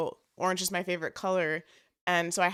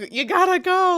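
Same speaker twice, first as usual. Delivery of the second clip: yelling, pitched up and louder; 12 semitones higher, 10 dB louder than usual. Retelling how they were hurried out while running late: imitating Alex yelling. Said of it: "Alex was yelling at us".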